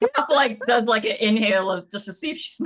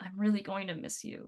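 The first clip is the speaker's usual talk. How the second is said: very quiet, close-up whisper; 13 dB quieter than usual. Narrating a scene where Pepper hugs Bryn tightly, whispering in her ear. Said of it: "whispers in her ear".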